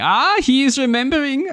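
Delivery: put-on German accent, pitched very high. Discussing the Toymaker, quoting Neil Patrick Harris's mock German accent. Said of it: "his mock German accent going".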